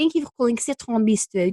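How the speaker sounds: put-on French accent. Phone greeting for Citron Bistro, in a put-on French accent. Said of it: "do it in a French accent... it sounds a little bit like this".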